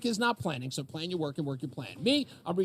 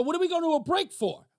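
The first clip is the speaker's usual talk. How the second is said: shrill, very high-pitched screaming outburst; 11 semitones higher, 5 dB louder than usual. Retelling an on-air argument with the producer, imitating himself screaming. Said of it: "So I start screaming at him".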